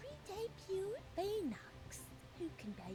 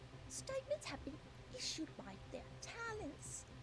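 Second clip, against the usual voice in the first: exaggerated, over-pronounced put-on British accent. Reading out the agency's shutdown statement in a put-on british accent. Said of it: "Because I was trying to be British".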